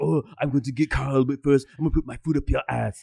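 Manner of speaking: put-on Austrian accent. Imitating what Arnold would say about going after someone: Arnold Schwarzenegger impression. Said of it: "give him an Arnold impression".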